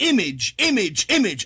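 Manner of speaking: image repeated, each one strongly stressed. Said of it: "I'm, I'm emphasizing".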